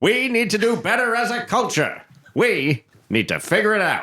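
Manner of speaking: put-on mid-Atlantic accent, pitched very high. Redoing another speaker's line as a bit: mid-atlantic accent. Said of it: "do that in that mid-Atlantic accent now".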